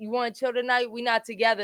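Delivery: ordinary talk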